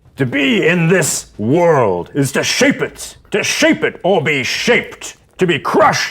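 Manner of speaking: yelling a rant. Game master voicing a character who shouts at a player's character: shouting rant. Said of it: "he starts shouting at you".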